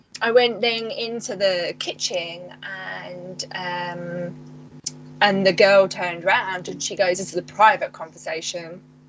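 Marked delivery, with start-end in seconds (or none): none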